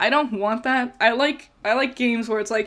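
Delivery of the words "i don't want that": ordinary talk, nothing marked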